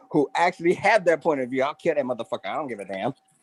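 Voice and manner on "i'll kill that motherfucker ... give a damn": put-on woman's voice, fully in character.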